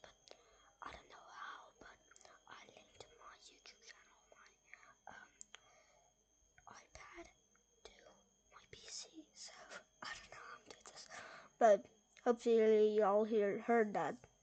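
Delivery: very quiet, breathy whisper all the way through. Greeting YouTube viewers at the start of a recording, whispering. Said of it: "I have to whisper this".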